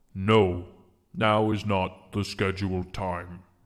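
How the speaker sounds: guttural stone-creature voice. Voicing a creature that taps its spear and answers: guttural stony voice. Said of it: "a guttural sort of stony mouth make noises".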